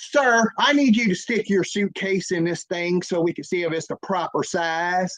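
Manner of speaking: the word sir dripping with attitude. Retelling how a woman called out to him: imitating someone saying sir with attitude. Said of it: "say the word sir with an attitude".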